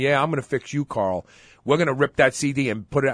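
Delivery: plain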